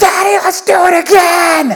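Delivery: play-acted full-volume child's shout, high and drawn out. Father retelling his five-year-old daughter's reaction after something scary: imitating a child yelling. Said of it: "at like volume 100".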